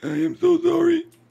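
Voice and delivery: throaty, very high-pitched and very loud voice. Trying a line as another player coaches: voice from back of throat. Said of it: "Further back in the throat".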